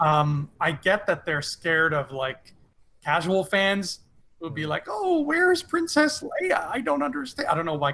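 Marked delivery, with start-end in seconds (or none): 4.9-7.5 put-on very high, puzzled old lady voice. Mocking casual Star Wars fans, in an old lady voice. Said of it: "casual fans sound like old ladies in my brain".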